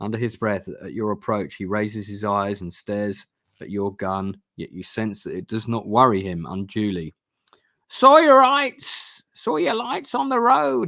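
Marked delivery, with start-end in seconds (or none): 7.9-10.9 croaking voice, very high and loud. Narrator voices a mumbling man speaking to those approaching, croaking. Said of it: "he croaks".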